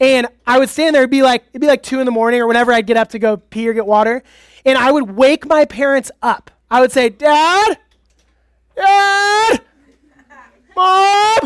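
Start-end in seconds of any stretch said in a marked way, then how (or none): 7.1-11.5 terrified calling out. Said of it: "Like that".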